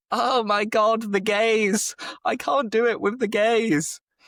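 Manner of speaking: mock, very high, slow, giggling through the words. Retelling his wife-to-be trying to down a fizzy drink: imitating her laughing while talking. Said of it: "she was trying to do it and laughing".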